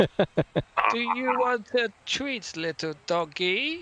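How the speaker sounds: put-on very high, doting elderly woman voice. Narrating a story scene, voicing an old lady who greets the group, old lady voice. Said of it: "you're gonna do old lady voice".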